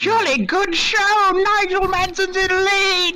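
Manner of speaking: put-on high, old-fashioned British race commentator voice. Asked for a 1950s F1 commentator voice, calling the race leader: 1950s F1 commentator voice. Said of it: "nineteen fifties F one commentator voice".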